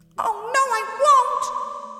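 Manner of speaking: very high, very slow, breathless, winded squeak. Narrator reading Big Mouth's reply with little breath left, breathless squeak. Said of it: "squeaked Big Mouth with what little breath he had left".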